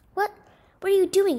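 very high-pitched, shrill, shouting yell. Aaron confronts Carl as he binds the pigeon, shouted. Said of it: "shouted Aaron".

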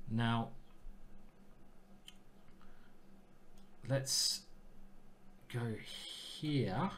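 very slow, drawn-out, hushed whisper. Speaker picking a move he has doubts about, very slow. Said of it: "I said that very slowly".

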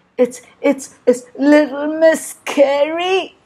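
shaking, teeth chattering. Found hiding under his bed, a character answers the question, trembling in fear, teeth chattering. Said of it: "chattered Mr. Jelly, trembling in fear".

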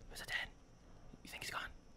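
put-on rapid, hushed, whispered kid chatter. Retelling how the kids behind the door talked: imitating kids whispering. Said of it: "they were whispering".

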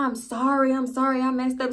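put-on crying with sniffles. Retelling a phone call with him, imitating him sniffling and crying. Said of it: "So he's sniffling, crying".

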